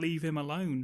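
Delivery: ordinary talk, nothing marked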